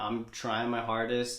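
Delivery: plain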